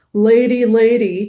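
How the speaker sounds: loud, throaty, back-of-the-throat dog voice. [name] speaks for the dog settling beside the narrator, in Bowie's back-of-throat dog voice. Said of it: "a timbre that lives in the back of the throat".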